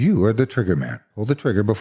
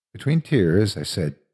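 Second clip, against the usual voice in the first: usual speaking voice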